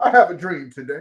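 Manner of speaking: loud, booming public-speech style delivery. Delivering a speech excerpt as a monologue: Martin Luther King Jr. impression. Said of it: "Come on, Martin".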